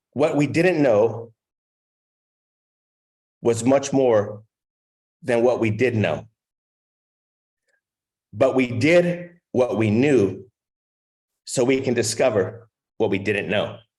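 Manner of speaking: slow, measured, careful, deliberate delivery. Sharing a quote with listeners, the speaker says it slowly. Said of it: "I'm going to say it slowly".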